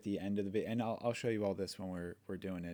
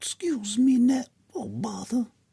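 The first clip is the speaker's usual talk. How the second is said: slow, stretched-out, high-pitched, loud delivery; 13 dB louder than usual. Recording a line for a yellow video character, using the Pooh Bear voice. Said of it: "We're just going to go with the Pooh Bear voice".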